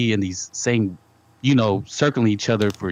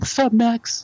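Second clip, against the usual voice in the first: very high-pitched street homeboy style voice; 13 semitones higher than usual. Imitating how a boxer would greet Max: imitating David Benavidez. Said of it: "You know how he talks?".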